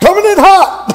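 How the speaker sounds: shrill, very high, loud shout. Retelling a zip line instructor yelling as the speaker came in fast: imitating an instructor yelling. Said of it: "he yells out".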